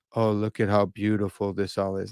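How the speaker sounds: flat, level monotone with no rise at all. Imitating Lex talking about beauty: flat Lex impression. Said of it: "I try not to talk as monotone as Lex".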